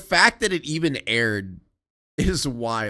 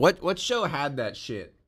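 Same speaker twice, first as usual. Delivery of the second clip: normal talking voice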